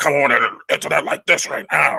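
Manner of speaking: loud, rough, mad and aggressive bark. Showing how an aggressive persona comes across, in an aggressive angry voice. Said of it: "He's in a very aggressive".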